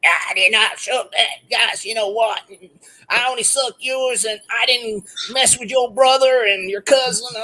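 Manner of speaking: high-pitched trashy woman voice.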